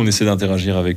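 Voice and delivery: normal talking voice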